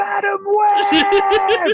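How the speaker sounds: very high-pitched screaming. Picturing a character driving around screaming, in Barnes' Spider-Man voice. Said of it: "driving around in Draco screaming".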